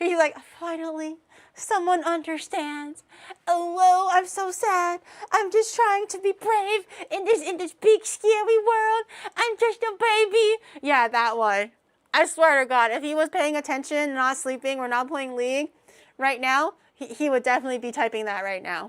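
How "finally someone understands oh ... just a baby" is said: high, whiny, whimpering crybaby voice, fake crying. Imitating a chat viewer posting a crying little squirrel emote: mock crying whiny voice. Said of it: "cue the crying little squirrel emote".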